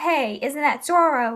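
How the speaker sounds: usual speaking voice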